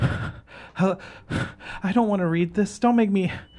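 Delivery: very high-pitched, slow, pleading whimper. Narrator voicing a woman jabbed with a sword and made to read, whimpering. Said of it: "while whimpering".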